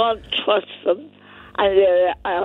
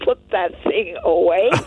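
plain

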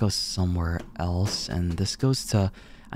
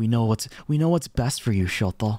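mocking nagging voice, higher; 3 semitones higher than usual. Mocking how a parent talks, imitating a nagging mom. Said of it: "You sound like my mom".

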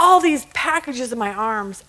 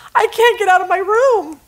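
mock high, tearful sobbing through every word; 8 semitones higher, 4 dB louder than usual. Telling a joke, a flight attendant on the phone: imitating someone crying and sobbing. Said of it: "she's crying and sobbing".

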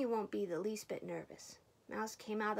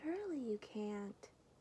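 put-on teeny, tiniest possible small little voice; 3 dB quieter than usual. Reading a story, Mouse speaks from the closet's farthest corner in the tiniest possible voice. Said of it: "said in the tiniest possible voice".

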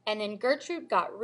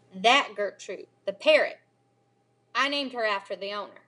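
usual speaking voice

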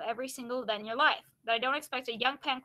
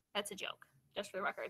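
plain reading voice

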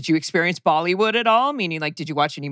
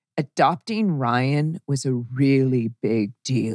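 very deep, very drawn-out, slow put-on voice; 3 semitones lower than usual. Recalling how she said that line with no voice, imitating her very deep voice. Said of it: "It was this deep".

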